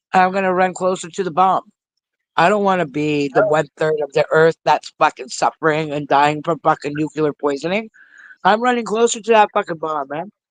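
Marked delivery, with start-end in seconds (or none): 8.4-10.2 words smacked through food, mouth full, chewing. Talking to the other speaker while eating, talking while chewing. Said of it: "I hear you smacking".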